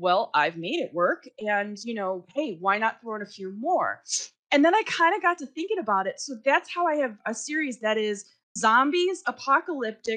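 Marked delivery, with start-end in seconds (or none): none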